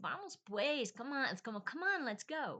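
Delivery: high, loud, whiny voice. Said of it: "a little whiny thing to say".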